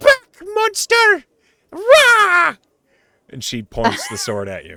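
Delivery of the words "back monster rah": put-on very high, loud small-child little-girl cry. Storyteller voices a child with a wooden sword facing the players, little girl voice. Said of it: "she looks up at you, and she just goes".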